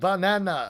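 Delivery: animated-movie cartoon creature voice. Saying a word the way the Minions do: Minion impression. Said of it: "that's my Minion impression".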